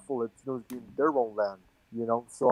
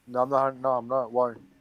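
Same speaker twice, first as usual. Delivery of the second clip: ordinary delivery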